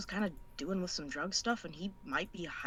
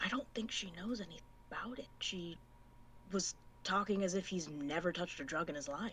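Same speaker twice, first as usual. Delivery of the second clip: hushed, leaning-in half-whisper in character voice; 6 dB quieter than usual. Leaning down to a fellow detective in the game: half-whispering in character. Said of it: "I whisper and I said".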